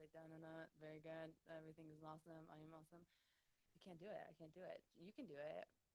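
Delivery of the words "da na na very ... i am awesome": one-note, droning monotone put-on voice. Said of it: "stays on, like, one note the whole time".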